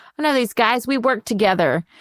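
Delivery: all bright, friendly, happy and chipper. Retelling how a man greets investigators at his workplace, imitating Tim acting all chipper. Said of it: "he's like acting all happy and chipper".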